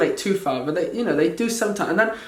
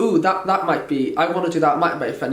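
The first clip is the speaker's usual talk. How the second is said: usual speaking voice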